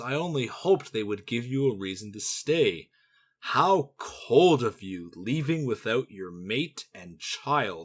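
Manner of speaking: put-on smug, self-satisfied villain voice. Retelling a game scene where the villain Talgath smiles: imitating Talgath smugly smiling. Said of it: "Talgath smiles and says".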